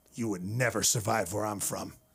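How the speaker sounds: low, dropped voice, brought way down. Retelling what the wife said about the hoodie: imitating wife's lowered voice. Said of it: "She dropped her voice to say that".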